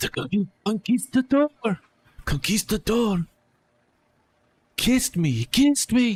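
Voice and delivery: loud, high-pitched stage whisper. Narrating a scene, a character talks toward the listener's face in a loud whisper. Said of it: "talking like loudly in a whisper towards your face".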